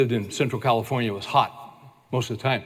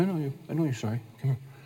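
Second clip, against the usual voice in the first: put-on calm voice, quieter; 6 dB quieter than usual. Retelling a father's words before a spanking: imitating dad's calm voice. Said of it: "He's very calm".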